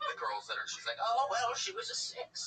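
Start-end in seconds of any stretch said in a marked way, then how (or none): 1.0-2.5 put-on very slow, drawn-out, high grandma voice. Imagining the grandma reporting back to your mom: grandma voice. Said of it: "That was my grandma voice".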